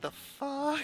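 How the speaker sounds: high, soft, stunned anime-style gasp, blurted in shock.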